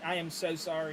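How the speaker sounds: ordinary talk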